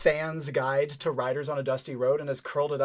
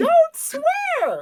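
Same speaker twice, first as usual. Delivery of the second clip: top-of-the-lungs scream, very high, very loud; 9 dB louder than usual. Voicing Gabby as a glitch bomb goes off: yelling at the top of her voice. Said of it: "at the top of her voice".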